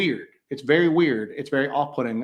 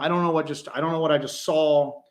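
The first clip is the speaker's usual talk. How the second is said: normal talking voice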